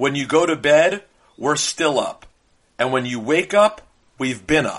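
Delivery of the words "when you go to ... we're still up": usual speaking voice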